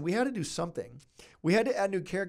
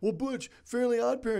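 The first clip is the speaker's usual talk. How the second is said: pitched-up, griping, complaining voice; 9 semitones higher than usual. Imitating people who comment on his videos, in a mock commenter voice. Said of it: "This is my person commenting voice".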